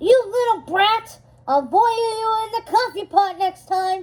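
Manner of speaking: high, screeching, shrieking goblin voice. Narrator voices a goblin as a girl runs out the door: shrieking goblin voice. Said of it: "the goblin shrieked".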